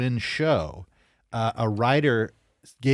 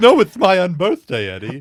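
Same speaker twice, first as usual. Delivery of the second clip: very loud, high, swooping, animated comic character voice; 8 semitones higher, 10 dB louder than usual. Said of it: "I also do a good Edwin".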